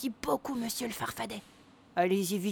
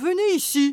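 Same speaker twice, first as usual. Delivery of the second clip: huge, very loud booming voice; 5 semitones higher, 10 dB louder than usual. Narrator reads a sudden call from the back of the workshop, in a big voice. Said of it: "Dit soudain une grosse voix".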